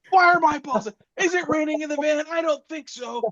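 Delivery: acted panicked yelling. Retelling how a friend woke up in a panic, imitating someone yelling. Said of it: "he starts yelling".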